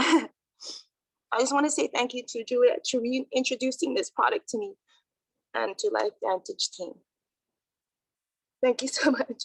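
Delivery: tearful crying, high pitch, voice cracking and breaking. Thanking the person who reintroduced the product and the team, while crying. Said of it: "I'm sorry, I'm crying".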